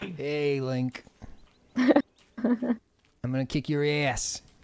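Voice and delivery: put-on spoken with a Boston accent. Joking that Ganon turns out to be from Boston, voicing him: Ganon with a Boston accent. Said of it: "Ganon is from Boston".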